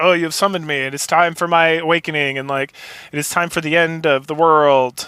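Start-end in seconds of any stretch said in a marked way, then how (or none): none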